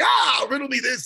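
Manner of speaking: goofy, high-pitched character voice. Recalling how the Riddler always talked in the other show: goofy Riddler impression. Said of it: "he's always like".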